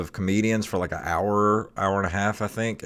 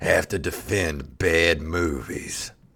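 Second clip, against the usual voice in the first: epic movie trailer narrator voice, lower; 3 semitones lower than usual. A podcaster tries out a commercial for the show; movie trailer announcer voice. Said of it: "He used to do the movie trailers".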